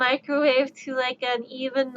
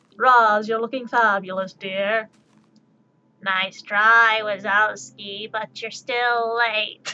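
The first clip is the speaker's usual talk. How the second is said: put-on old woman voice, much lower pitch; 3 semitones lower than usual. Joking about sounding like Roz on an oxygen tank, doing Roz on an oxygen tank. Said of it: "how I would probably sound on an O2 tank".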